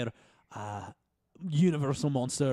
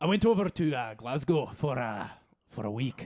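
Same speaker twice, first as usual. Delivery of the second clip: bad put-on Scottish accent. Podcast Bot 8000 tells host Buck about a trip, in a bad Scottish accent. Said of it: "my shitty Scottish accent".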